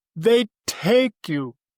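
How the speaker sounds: mock tearful, high-pitched speech through crying. Retelling what Ali said when the dam cracked, imitating Ali crying. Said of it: "and he's crying".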